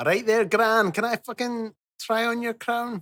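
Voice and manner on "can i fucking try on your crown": bad fake Scottish accent, much higher, quieter. Speaking to Gran, the speaker does a bad Scottish accent. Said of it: "it was still a bad accent".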